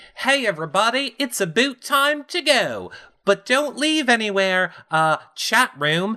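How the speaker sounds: very high put-on Canadian accent drifting into Australian. Speaker shows how they sound canadian, signing off to the chat: failed canadian accent, sounds australian. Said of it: "why does everything go to Australian?".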